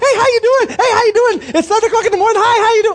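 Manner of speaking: bubbly, high-pitched, chirpy, over-cheerful voice. Imitating a bubbly person greeting early in the morning: imitating a bubbly person. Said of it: "one of them bubbly people".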